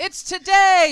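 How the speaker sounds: very loud, high, slow shout.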